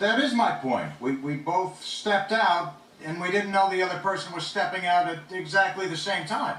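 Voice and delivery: high, yell-like tone. Explaining to another person that they both stepped out together: yelling. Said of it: "why are you yelling at me right now?".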